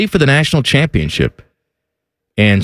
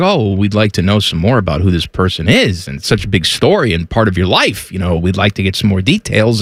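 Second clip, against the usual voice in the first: ordinary talk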